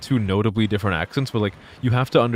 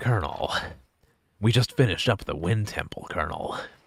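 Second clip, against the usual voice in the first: hushed, breathy soldier voice, barely voiced; 2 semitones lower, 7 dB quieter than usual. Showing off a video game impression, doing a Snake impression. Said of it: "I can do like an all right Snake".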